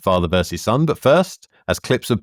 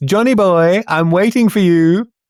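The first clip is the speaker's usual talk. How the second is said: high, camp, cooing voice; 9 semitones higher, 4 dB louder than usual. Recapping a video, the speaker quotes a second man calling to Johnny, camp cooing voice. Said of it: "coos in a camp voice".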